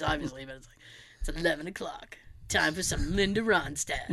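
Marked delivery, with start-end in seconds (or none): 1.2-4.1 deepest late-night radio announcer voice. Imitating a radio DJ with the deepest voice: imitating a DJ's deep voice. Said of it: "I can't do a deep voice".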